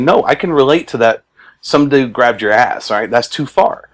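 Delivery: ordinary talk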